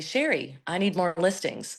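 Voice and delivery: put-on very sweet, kindly voice. Retelling how Maria always asks for more listings: imitating Maria's sweet way of asking. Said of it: "she says it in a really sweet way".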